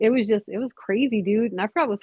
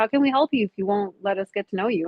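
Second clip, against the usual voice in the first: usual speaking voice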